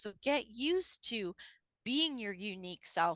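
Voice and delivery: ordinary talk, nothing marked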